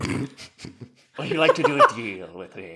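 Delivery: loud, booming spooky tempter voice, swooping. Showing the others how the character sounds when he comes out: Sauron voice. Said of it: "the voice of Sauron".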